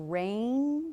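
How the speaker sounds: very slow, stretched out. Teacher modeling blending syllables for students to repeat: very slow. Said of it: "I'm going to say a word very slowly".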